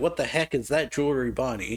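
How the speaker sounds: ordinary delivery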